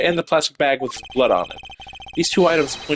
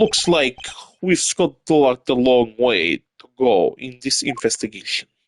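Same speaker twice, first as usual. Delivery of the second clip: very bad, botched put-on Russian accent; 3 semitones lower than usual. Voicing a game character's dialogue during an investigation, bad russian accent. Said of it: "This Russian accent has gotten very, very bad".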